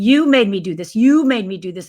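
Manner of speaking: mock yelling. Retelling how his father turned on his mother with a gun, imitating someone yelling. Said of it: "I start screaming".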